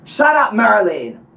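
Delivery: irritated, exasperated tone. Hearing a noise during a ritual and telling the dog off: shouting. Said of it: "I don't mean to shout".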